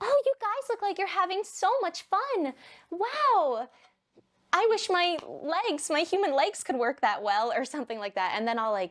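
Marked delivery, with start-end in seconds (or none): 0.0-7.5 very high, sugary, sweet princess-doll voice. Standing outside the bounce house at parties, talking to those inside, Barbie voice. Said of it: "That was just like the perfect Barbie voice".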